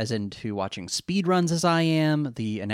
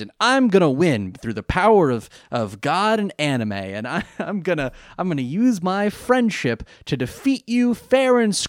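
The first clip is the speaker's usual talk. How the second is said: put-on determined shouting voice, much higher; 6 semitones higher, 3 dB louder than usual. Mocking how another player talks, imitating shouty, determined guy. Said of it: "everything he does is like shouting and determined".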